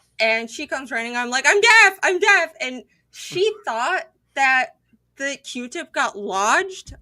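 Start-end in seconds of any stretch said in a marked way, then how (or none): 1.5-2.5 very high, very loud, panicked shriek. Retelling screaming to mom after the ear injury: imitating own screaming. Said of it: "I was screaming for my mom".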